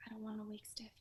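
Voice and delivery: whispering voice. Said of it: "What are you whispering for?".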